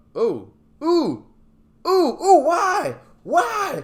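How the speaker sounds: very high, loud startled shriek. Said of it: "That would kinda be my reaction".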